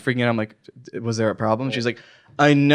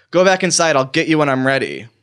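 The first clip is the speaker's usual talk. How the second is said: put-on short-tempered, curt, snapping voice; 2 semitones higher than usual. Retelling what a bus driver told waiting passengers: imitating someone snapping. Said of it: "she snaps at us".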